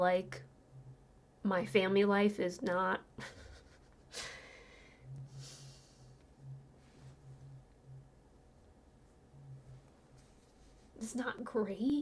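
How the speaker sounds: voice fighting back tears, on the verge of crying. Telling viewers about a hard family life, holding back tears. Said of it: "I'm trying really hard not to cry".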